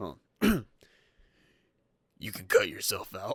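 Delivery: loud, swooping, belted voice with southern twang. Retelling a scene from the graphic novel, quoting Rorschach: southern-sounding Rorschach impression. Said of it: "it sounds southern".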